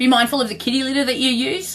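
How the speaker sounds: failing voice, barely holding. Speaker apologizes to viewers and repeats the advice, voice giving out. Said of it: "I can hear my voices going".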